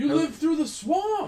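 very high, very loud, startled, surprised shout. The paladin hails the group as friends, with a surprised yell. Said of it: "he yells".

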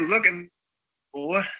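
high cartoon rooster voice. Recalling the speaker's dad talking like a cartoon chicken: Foghorn Leghorn voice. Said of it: "My dad would love talking like that fucking fucking chicken".

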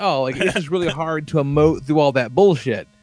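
plain

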